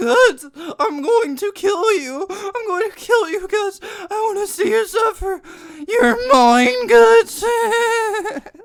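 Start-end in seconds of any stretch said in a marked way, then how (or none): 0.0-7.4 very high, very loud, shrill put-on voice. Joking while watching a battle, doing Griffith voice. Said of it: "make that Griffith's voice".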